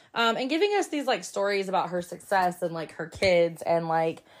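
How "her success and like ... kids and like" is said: ordinary talk, nothing marked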